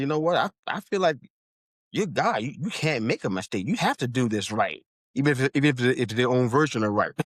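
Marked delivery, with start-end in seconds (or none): none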